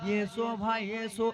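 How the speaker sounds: crying, pleading voice.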